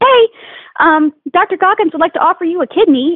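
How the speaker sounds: bright cheery voice. Recounting a phone call two hours before leaving for a pageant, retelling a chipper caller's voice. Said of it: "it was a chipper voice on the other line".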